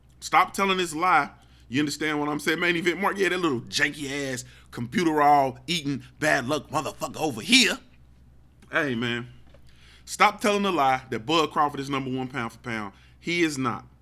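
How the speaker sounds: ordinary talk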